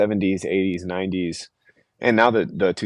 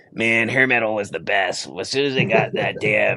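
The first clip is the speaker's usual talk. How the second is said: small, cranky, grumpy little grumble. Recalling a grumpy little dude who loved hair metal, imitating his grumpy little voice. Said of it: "he had this like grumpy little voice".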